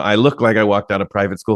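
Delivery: ordinary talk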